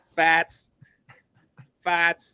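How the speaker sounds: put-on Boston accent, loud and high. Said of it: "Get that Boston accent".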